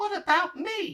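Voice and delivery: very high, loud, squeaky little voice. Narrator reading Piglet interrupting the author, squeaky Piglet voice. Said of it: "said in his squeaky voice".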